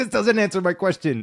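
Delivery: high, loud, exasperated voice.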